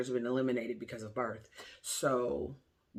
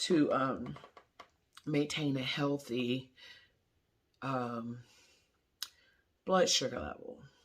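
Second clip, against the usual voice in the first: holding back tears, pushing through. Pregnant speaker telling viewers about her diagnosis, holding back tears. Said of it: "I'm trying not to cry".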